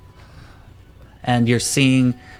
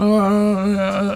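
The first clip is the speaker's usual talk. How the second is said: high, strained, pained, stunned grunts. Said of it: "it more sounds like".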